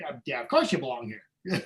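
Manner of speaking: tossed off easily, casual and upbeat. Retelling what Maynard answered when apologizing for not belonging: Maynard impression. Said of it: "Great impression, by the way".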